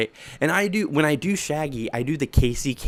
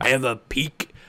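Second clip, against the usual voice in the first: put-on pirate voice. Talking about characters from the books, slipping into a Foxy pirate voice. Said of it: "that's just my pirate voice".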